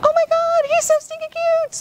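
very high, squeaky cooing voice. Telling students how to approach the working pup, demonstrating the high-pitched voice to avoid. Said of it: "don't necessarily go with the high-pitched".

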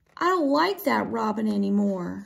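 plain

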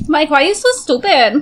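put-on Latin American accent.

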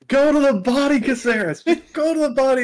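mock very high-pitched coach-style yelling. Retelling friends watching a fight live, imitating Jimmy yelling. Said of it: "Jimmy yelling".

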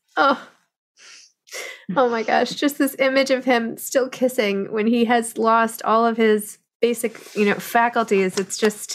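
overcome, deeply moved, emotional outpouring. Reacting after hearing a passage read aloud, emotional. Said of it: "I'm emotional".

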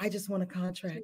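hushed, very quiet, flat, unexcited, acted out. Retelling how a colleague announced winning a contract: imitating someone sounding unexcited. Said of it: "she didn't even sound excited".

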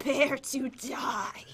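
creepy, scary, breathy whisper. Joking before a game match starts: scary voice. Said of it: "Did I sound scary?".

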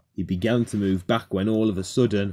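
ordinary delivery

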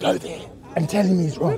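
very quiet, barely audible whisper. Urging someone to go tell another man he's wrong, whispering. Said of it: "Now I'm whispering".

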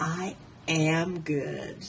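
soft half-whisper. A gingerbread girl who has just tied a fox's snout, half-whispering in his ear. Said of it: "she whispered in the fox's ear".

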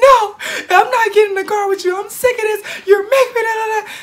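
very high, tearful crying yell. Speaker retelling yelling at her mom through tears, retelling a tearful yell. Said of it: "So I'm yelling at her, tears all the way down my".

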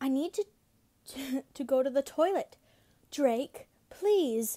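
pleading voice.

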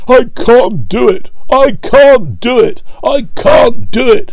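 very high, very slow, puffing, strained words. Gordon pulls the train while Edward pushes behind; puffing out the words. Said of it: "puffed Gordon".

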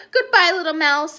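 ordinary delivery, nothing marked

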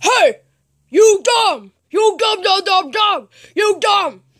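high-pitched cartoon teacher voice. Showing Mr. Jackie Chu he can do his voice, Jackie Chu impression. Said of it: "I can do your voice".

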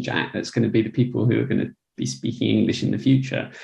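ordinary delivery

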